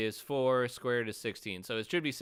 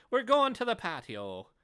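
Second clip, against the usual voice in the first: bad Irish accent, higher and louder; 11 semitones higher, 4 dB louder than usual. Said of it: "with my terrible Irish accent".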